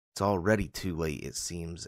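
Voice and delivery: ordinary talk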